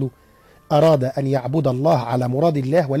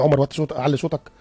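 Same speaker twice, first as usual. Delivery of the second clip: plain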